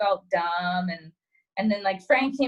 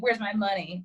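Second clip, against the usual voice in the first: usual speaking voice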